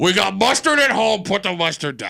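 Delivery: put-on elderly old man's voice. Mocking the other speaker's complaint by imitating an old man. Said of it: "Could you have sounded more like an old man?".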